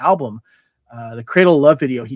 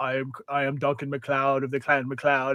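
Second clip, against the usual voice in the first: flat, level, robotic monotone delivery; 10 dB quieter than usual. Recalling a show's intro line: Adrian Paul robotic voice. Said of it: "that robotic type of voice".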